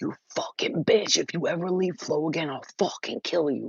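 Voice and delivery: furious, angry voice, toned down. Recounting what a guy screamed in a woman's ear, retelling a screamed threat. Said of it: "he screamed in her ear".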